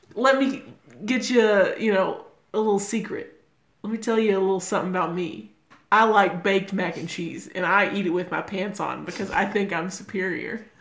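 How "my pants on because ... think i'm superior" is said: ordinary talk, nothing marked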